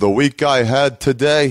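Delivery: angry, very slow, drawn out. Imitating how a comedian opened every set, angry Jersey comic voice. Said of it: "That sounds like Dice even".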